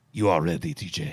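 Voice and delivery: put-on French accent, very low, saucy, upper-crust. Host coaching T J in French phrases, saucy upper-crust French accent. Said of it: "a podcast of saucy and upper crusty Frenchmen".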